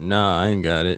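offhand, put-on, deep low voice. Recounting asking him about missing headphones, the speaker quotes his reply in a deep put-on voice. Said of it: "In a deep voice".

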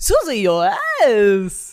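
famous-actor-style voice with wide, swooping pitch. Asked to do a famous impression: Christopher Walken impression. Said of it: "do your famous Christopher Walken".

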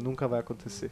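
almost a whisper. Retelling what a series character says to the camera, half-whispering. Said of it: "meio sussurrando".

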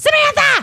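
very high, loud, shrill hollered yell. Showing how she tells people to call her name: yelling the name samantha. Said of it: "please don't hesitate to yell. ... I say it like that".

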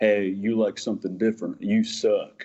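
put-on American Southern accent. Acting out someone shutting down a person with different tastes, put-on Southern accent. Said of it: "for adopting a Southern accent".

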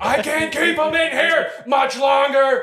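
very high, stretched-out, drawn-out screaming. Retelling how your dad screamed at the adult cows: imitating someone screaming. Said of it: "screaming at the adult cows".

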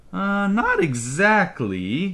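sheepish, evasive, awkward, high and swooping. A father answers the mother's appalled question, awkward. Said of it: "Ba said awkwardly".

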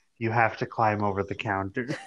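dead flat, expressionless, matter-of-fact deadpan. Retelling a woman's answer to Len's question: retelling a deadpan reply. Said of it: "like deadpan".

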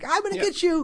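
very high-pitched, squeaky grunting voice. Describing the game's grunt enemies, in a high-pitched grunt enemy voice. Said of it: "they have that really high-pitched voice".

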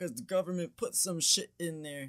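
dopey earnest voice. Retelling what a coworker said about the government: imitating a coworker, made to sound dumb. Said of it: "your voice impression of your coworker".

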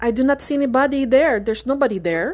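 imitated Filipino accent. Speaker retelling the aunt's reply about the man on the patio, in a Filipino accent impression. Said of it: "that's my impression of Filipino accent".

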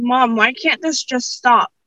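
put-on crying, bawling. Retelling a night a school shutdown came, imitating own past crying. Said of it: "And I just bawled".

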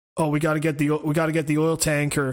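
put-on flat delivery. Mocking an actor's line delivery, doing a mock-deadpan Paul Walker line. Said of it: "the most fucking deadpan shit".

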